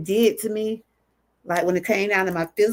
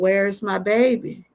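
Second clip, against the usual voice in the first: acted emotional, pleading cry. Retelling own words after a sonogram: reenacting an emotional plea. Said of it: "I got very emotional".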